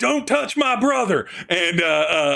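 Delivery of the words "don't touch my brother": very high, shrill shout. Narrating a fight, the speaker voices the other brother as he swings: yelling. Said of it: "the other brother who just yells".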